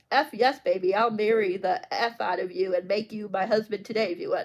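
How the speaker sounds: normal talking voice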